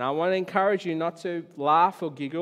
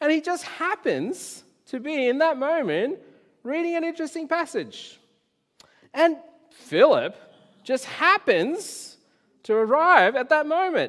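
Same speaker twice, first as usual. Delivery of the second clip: heavy sarcasm delivered at a very high pitch; 10 semitones higher, 4 dB louder than usual. Explaining a Bible passage to listeners, speak in a sarcastic voice. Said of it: "that's my sarcastic voice".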